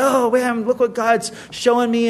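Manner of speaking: mock, bursting with excitement, all-excited outburst. Retelling going to the youth pastor's office, imitating own past excitement. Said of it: "and I'm all excited".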